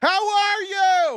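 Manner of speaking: very high, shrill, shouted voice. Speaker imitates their dad greeting people with accents up close, imitating dad's yell. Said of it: "My dad used to yell at anybody".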